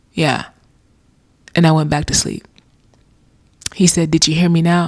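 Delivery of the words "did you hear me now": acted-out hushed, quiet voice. Retelling words heard in their ear after waking at night, retelling words said quietly. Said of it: "And quietly in my ear".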